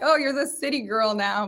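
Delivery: ordinary delivery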